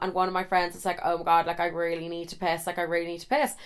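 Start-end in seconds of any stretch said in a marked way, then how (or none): none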